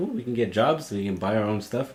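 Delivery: ordinary talk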